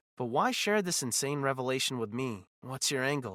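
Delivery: plain reading voice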